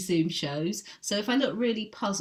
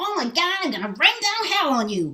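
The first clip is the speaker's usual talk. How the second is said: put-on very high, very silly, stupid-sounding American accent; 11 semitones higher, 7 dB louder than usual. Recalling grumbling about an unpleasant man, putting on a very stupid american accent. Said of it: "I put on some very stupid American accent".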